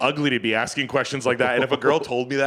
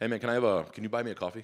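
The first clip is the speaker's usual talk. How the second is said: put-on pushy, insistent voice, quieter; 3 semitones lower, 8 dB quieter than usual. Retelling a pushy stranger's request on the street: imitating a pushy beggar. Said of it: "Just like that".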